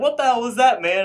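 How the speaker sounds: high, loud, exasperated outburst.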